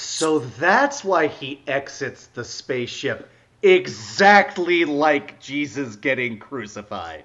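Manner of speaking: drawn-out, slow, extremely sarcastic delivery. Responding sarcastically to two others praising a film: extremely sarcastic. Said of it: "my extremely sarcastic way of saying".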